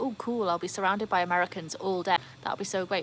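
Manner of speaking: ordinary talk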